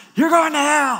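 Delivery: very high, shrill, megaphone-like shout. Speaker recalls a picketer yelling at passing cars, retelling a megaphone shout. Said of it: "he's just shouting at cars driving by".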